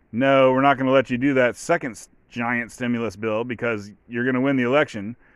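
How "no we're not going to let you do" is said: ordinary delivery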